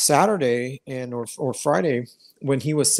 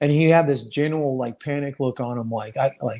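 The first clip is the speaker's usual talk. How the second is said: plain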